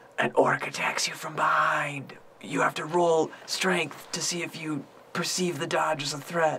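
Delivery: hushed whisper. Showing how the speaker would run Dungeons and Dragons over the phone, whispering into the phone. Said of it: "I'd probably like whisper it into the phone like".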